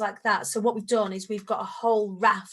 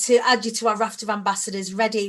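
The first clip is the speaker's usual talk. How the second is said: normal talking voice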